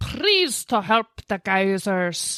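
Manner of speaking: broad Scottish accent, brogue. Retelling what guisers in disguise used to say: scottish accent. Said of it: "you nailed it".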